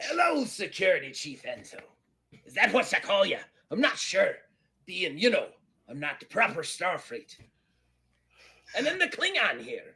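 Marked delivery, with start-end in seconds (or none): 0.0-7.4 high, loud pirate bellow. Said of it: "Eddie Teach just kinda sits down".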